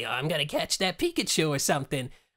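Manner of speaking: cartoon cat voice with swinging, swooping pitch. Explaining whose take on Meowth they channel, then demonstrating; Meowth voice. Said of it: "he used to talk like this".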